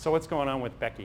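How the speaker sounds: ordinary talk, nothing marked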